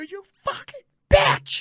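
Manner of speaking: play-acted, very high-pitched, seething, furious outburst. Retelling swearing at the tv after an injury: retelling an angry yell. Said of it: "I must have said bitch thirty times".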